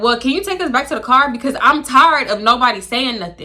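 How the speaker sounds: ordinary talk, nothing marked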